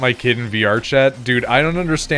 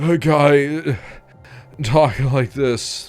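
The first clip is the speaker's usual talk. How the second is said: exaggerated panting, winded voice, "guy" drawn out; 3 semitones higher than usual. Describing guys in VR Chat clips, the speaker imitates a breathless guy. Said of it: "you never get that out of breath".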